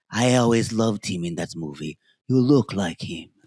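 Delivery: put-on heavy, laid-on-thick Greek accent, low pitch. Retelling what a rich man said while squeezing his hand: thick Greek accent. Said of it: "in a very thick Greek accent".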